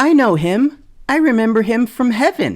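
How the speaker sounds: put-on very high, plainly stated, matter-of-fact kid voice. Retelling what a toddler said about knowing him: imitating a kid, matter-of-fact. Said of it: "is just matter-of-factly like".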